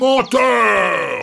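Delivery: shouting. Reading the wolf's retort in a story, shouting. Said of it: "cria le loup".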